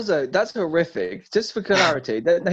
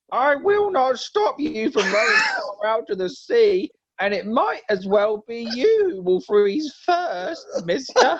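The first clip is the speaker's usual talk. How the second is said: put-on grown man faking a little-boy voice, pitched up; 6 semitones higher than usual. Narrating Thor's reply in his disguise: a grown man imitating a young child. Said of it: "do it as like a grown man trying to imitate a young child".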